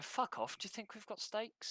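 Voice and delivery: low, obnoxious, rude, dismissive voice. Describing the trader's reply to a customer, the speaker voices a rude arsehole. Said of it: "Does he sound like an arsehole?".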